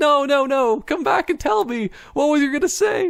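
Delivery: put-on very high, frantic, freaked-out voice. Retelling a reaction to a walk-off: imitating someone freaking out. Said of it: "freaking out".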